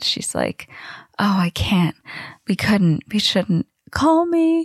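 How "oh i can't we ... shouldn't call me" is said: woeful, sorrowful, mournful delivery. Retelling Margaret's goodbyes to Cousin It: Margaret's mock-woeful goodbye. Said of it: "says her woeful goodbyes".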